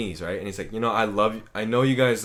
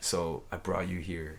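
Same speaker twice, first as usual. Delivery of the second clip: mock creepy voice, lower and quieter; 5 semitones lower, 11 dB quieter than usual. Retelling how a date's line was said: imitating a creepy tone. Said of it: "he was saying it in that tone".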